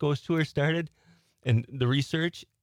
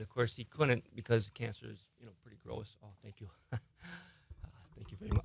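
very soft, barely audible, far from mic. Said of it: "you sounded like you were from the outer realm".

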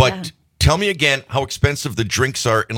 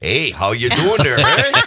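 put-on Wisconsin accent. Recalling a commercial part, demonstrating the line in a Wisconsin accent. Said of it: "a Wisconsin version of the Wisconsin accent".

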